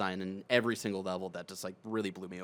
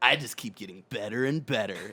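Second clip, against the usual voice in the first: put-on cool low whisper voice, louder; 2 semitones higher, 5 dB louder than usual. Imagining a game voice whispering praise in the ear: Spike voice from Cowboy Bebop. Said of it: "In his Spike voice from Cowboy Bebop".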